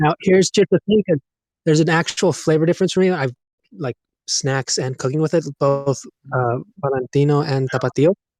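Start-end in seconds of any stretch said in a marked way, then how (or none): 6.8-8.1 native Spanish pronunciation. Naming the hot sauces used for snacks and cooking: Spanish pronunciation. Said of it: "More accents".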